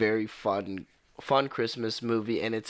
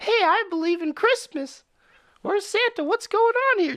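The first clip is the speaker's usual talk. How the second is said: very high, loud, excited hollering, acted out; 5 dB louder than usual. Describing a tall guy in the city, the speaker imitates his high-voiced yelling. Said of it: "Just yelling and everything like that in his high voice".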